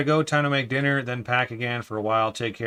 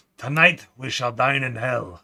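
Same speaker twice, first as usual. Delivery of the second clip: bad, fake, put-on Scottish accent. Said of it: "It's a horrible uh, Scottish accent".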